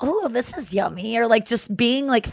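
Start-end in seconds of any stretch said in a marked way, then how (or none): 0.0-1.2 slow, fake sweet, sugary voice. Retelling how she acted when a boyfriend got mad: imitating her fake sweet voice. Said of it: "talking like this more and, like, being like".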